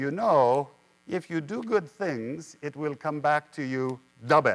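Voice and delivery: put-on thick Greek accent, laid on heavily. Quoting what an old Greek woman always told them, in a thick Greek accent. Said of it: "in her thick Greek accent".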